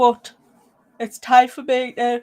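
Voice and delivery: speaking through a yawn. Speaker signing off to everyone for the night, yawning mid-sentence. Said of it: "sorry, I'm yawning now".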